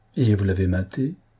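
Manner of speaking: plain reading voice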